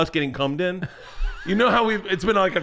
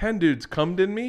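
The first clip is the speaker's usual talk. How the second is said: ordinary talk, nothing marked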